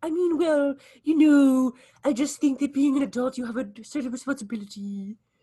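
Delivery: demure, mild, a touch high pitched. Retelling a co-star's answer about being an adult: imitating Phil Lewis sounding demure. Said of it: "so demure".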